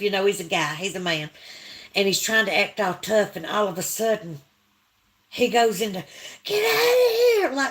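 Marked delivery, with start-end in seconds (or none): 6.4-7.5 mock very high, frightened, panicked scream. Retelling how a man screamed when the creatures roared: imitating a panicked high scream. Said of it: "screaming like half woman, half man".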